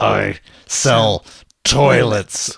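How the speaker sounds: acted furious, enraged words hissed out. Retelling how an old classmate answered the husband's question, mock-enraged hiss. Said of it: "he actually is enraged immediately and like hisses".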